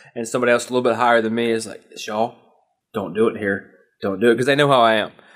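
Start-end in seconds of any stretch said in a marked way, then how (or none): 2.0-4.4 muttered under breath, slower. Speaker quotes someone higher-ranked warning them, retelling it under their breath. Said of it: "Like under their breath".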